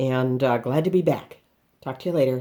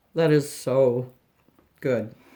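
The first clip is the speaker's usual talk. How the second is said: speaking while chewing, mouth full. The cook tastes the buttered cheese bread, talking with mouth full. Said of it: "excuse my chewing and full mouth".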